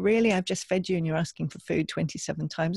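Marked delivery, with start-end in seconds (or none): none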